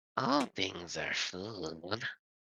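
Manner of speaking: very soft, hushed, eerie, creepy little voice. Voicing a creature that is asked what it likes to eat: creepy little voice. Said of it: "very creepy little ugh, voice".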